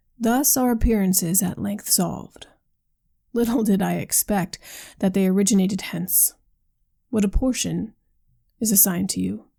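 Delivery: ordinary delivery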